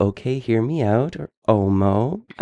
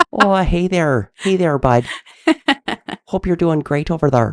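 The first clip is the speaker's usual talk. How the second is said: light Irish accent, pitched up; 7 semitones higher than usual. Trying out ways of saying a word in conversation, in a kind of irish accent. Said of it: "That was kind of Irish".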